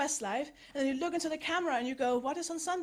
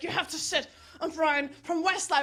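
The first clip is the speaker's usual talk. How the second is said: put-on sharp angry snapping voice. Retelling how the producer snapped at them: imitating a snapping producer. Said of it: "She snapped".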